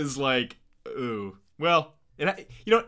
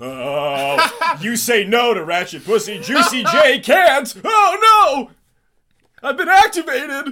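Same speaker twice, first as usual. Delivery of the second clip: mock, very loud, very slow, booming, rising announcer voice; 9 semitones higher, 9 dB louder than usual.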